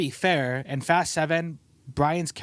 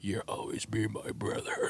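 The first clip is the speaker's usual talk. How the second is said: deep, low voice, slow and breathy; 6 semitones lower, 10 dB quieter than usual. Retelling a movie scene about brothers: Vin Diesel voice. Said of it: "you know Vin Diesel's voice".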